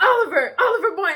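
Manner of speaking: very loud, shrill, screaming yell. Retelling a friend calling out someone's name: imitating a friend yelling. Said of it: "starts yelling".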